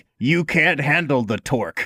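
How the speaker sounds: ordinary delivery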